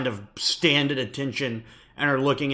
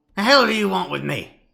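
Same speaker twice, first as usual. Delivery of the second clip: put-on creaky, rough, high, loud old gnome voice; 7 semitones higher, 5 dB louder than usual. Voicing an elderly gnome who answers from inside a cabin: elderly gnomish man voice. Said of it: "he looks at you and says".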